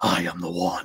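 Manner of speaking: deep, hushed, breathy, open-chest voice. Coaching someone to open the chest and say a line: deep, breathy chest voice. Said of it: "to make it breathy. So you open up your chest and go".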